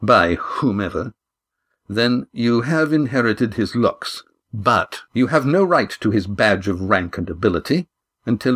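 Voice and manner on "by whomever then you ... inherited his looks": usual speaking voice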